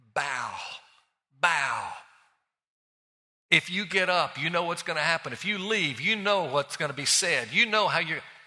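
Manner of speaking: put-on mild, demanding half-yell, scream kept mild. Retelling a night at a drive-in, voicing a statue that urges bowing: imitating a screaming statue. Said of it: "the statue of Babylon was screaming at me".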